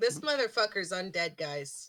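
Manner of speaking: matter-of-fact, sure, confident tone. Voicing a character telling the group the man is undead: sure of herself. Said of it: "as sure of herself as I did".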